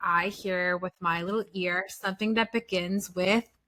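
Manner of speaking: ordinary talk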